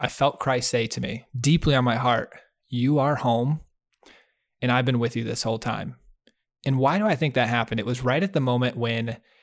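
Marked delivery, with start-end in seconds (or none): none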